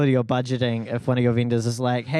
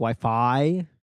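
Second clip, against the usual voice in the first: Wi-Fi with the second syllable fi stressed. Discussing how to say Wi-Fi, stress on Fi in Wi-Fi. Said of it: "more emphasis on the Fi, like Wi-Fi".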